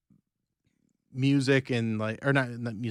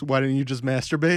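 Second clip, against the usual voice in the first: ordinary talk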